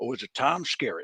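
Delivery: put-on strong country accent. Reading out a trivia answer option: really country voice. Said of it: "I just made him sound really country".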